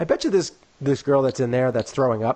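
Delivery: ordinary talk, nothing marked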